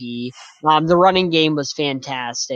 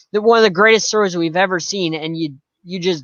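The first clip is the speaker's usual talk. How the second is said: ordinary talk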